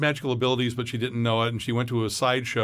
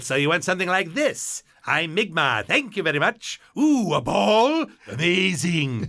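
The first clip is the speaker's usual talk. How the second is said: conniving, slow, pitched-up voice; 6 semitones higher, 3 dB louder than usual. Retelling an audition for a conniving magician role: Jon Lovitz voice. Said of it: "I did it as Lovitz".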